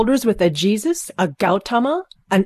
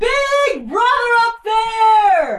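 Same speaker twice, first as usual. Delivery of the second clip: very high, full-voiced, top-of-the-lungs shout; 13 semitones higher than usual. [name] calls up to the President, shouting at the top of his voice. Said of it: "shouts at the top of his voice".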